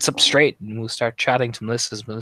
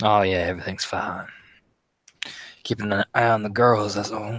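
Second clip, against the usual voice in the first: put-on drawling Southern accent. In a roleplay, a character answers whether everything is all right, in a southern drawl. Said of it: "It's the drawl".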